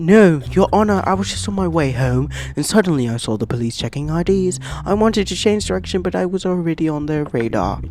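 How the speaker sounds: put-on British accent. Voicing a defendant answering a judge in a courtroom scene, put-on British accent. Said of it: "I'm gonna give him a British accent".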